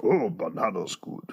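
deep, low-pitched voice. Doing the voice of the short guy with the mustache. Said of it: "the mustache guy goes".

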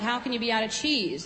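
ordinary delivery

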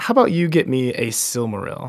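normal talking voice

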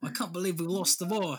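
clumsy, bad put-on British accent. Right after saying they can't do one, trying a british accent. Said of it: "I can't do a British accent, can you?".

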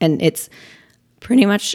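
cracking voice. Speaker talking mid-sentence when the voice cracks. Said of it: "voice crack".

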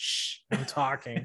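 put-on shushing, old-time usher voice. Joking about a courtroom suit, acting out an old-time movie theater usher: shushing movie theater usher. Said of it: "a movie theater usher from way back when".

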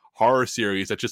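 ordinary talk, nothing marked

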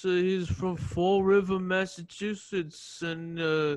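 mock flat, lifeless monotone delivery. Describing a former roommate to co-hosts, imitating his lifeless voice. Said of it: "just talk like this".

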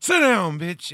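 very loud, high-pitched barked delivery. Retelling a movie scene where an actor snaps at someone: Crispin Glover voice. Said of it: "in Crispin Glover voice".

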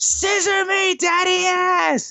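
very high, stretched-out wrestling-ring-style scream. Retelling a wrestling moment where a wrestler screams: imitating a scream at top of lungs. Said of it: "scream at the top of his lungs".

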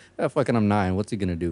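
ordinary delivery

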